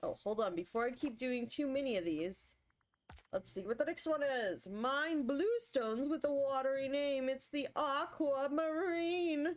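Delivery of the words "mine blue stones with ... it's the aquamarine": put-on announcer-style presentation voice. Speaker reads out the next clue and its answer, in announcer voice. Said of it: "I get stuck into announcer voice at times".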